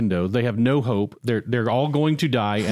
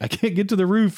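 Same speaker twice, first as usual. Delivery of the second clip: mock very high, shrill scream into mic; 9 semitones higher than usual. Retelling a film scene where a man screams into a mic: imitating someone screaming. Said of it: "he's suddenly screaming into the mic".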